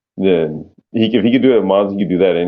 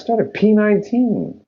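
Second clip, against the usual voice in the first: high, sarcastic voice. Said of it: "he wanted to be sarcastic and say".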